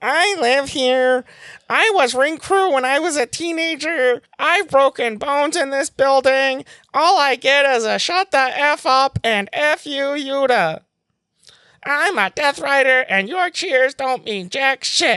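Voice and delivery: very high, squeezed nasal voice. Retelling what Yuta said on the mic during an ad break, nasally Yuta impression. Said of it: "He's got like this like nasally voice".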